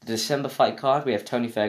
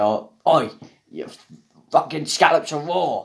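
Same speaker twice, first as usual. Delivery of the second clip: loud, shouting chef voice; 4 semitones higher, 6 dB louder than usual. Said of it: "I don't know why I did that voice".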